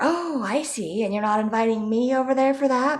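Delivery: put-on snide sarcasm. Retelling what relatives would say about skipping family dinner: imitating sarcastic relatives. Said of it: "they would make sarcastic comments".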